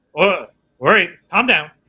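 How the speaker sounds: dampened, muffled, filtered voice through helmet. Voicing a character wearing a helmet: muffled voice through helmet filters. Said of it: "His voice is kind of muffled".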